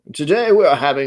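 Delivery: attempted English accent. Joking about dressing up fancy, trying out an English accent. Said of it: "talk in an English accent".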